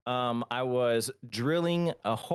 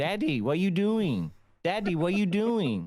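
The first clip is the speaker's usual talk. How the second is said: put-on high voice of a small kid; 7 semitones higher than usual. Retelling how his son kept asking after the injury: imitating his son. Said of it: "and he's like".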